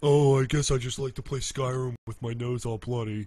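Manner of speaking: booming, blaring, very loud character voice. Revealing his Tony impression is really his former roommate's voice, imitating Damien. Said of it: "impression of Tony is actually my impression of Damien".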